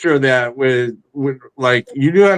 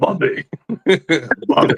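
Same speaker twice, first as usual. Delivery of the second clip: put-on old martial arts teacher voice. Retelling a comedian's bit, imitating him doing Mister Miyagi voice. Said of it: "He went full Mister Miyagi".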